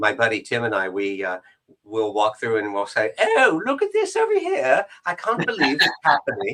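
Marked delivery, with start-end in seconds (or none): 3.2-6.5 put-on English accent, very high, sing-song and swooping. Retelling how he and his buddy walk around England, speaking in an English accent. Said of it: "then I do an English accent".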